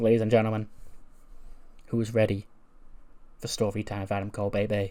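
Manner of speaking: mock-grave, funeral-solemn, somber announcer voice. Retelling a wrestler's speech from the ring podium, mock-somber Adam Cole voice. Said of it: "in a somber voice".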